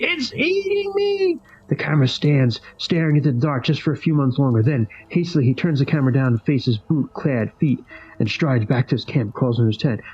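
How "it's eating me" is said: very high, hard, haggard scream. Narrator reads a distant voice from the dark replying to a camper, haggard screaming voice. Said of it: "the haggard, hard, scream, screaming voice replies".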